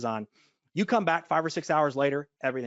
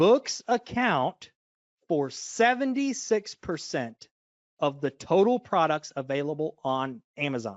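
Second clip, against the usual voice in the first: very slow, drawn out, every word weighed. Presenting a chart of Amazon categories, the speaker gives a key figure: said really slowly. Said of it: "let me say this really slow".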